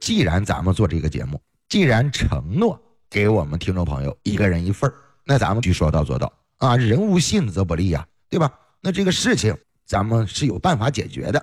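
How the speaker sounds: plain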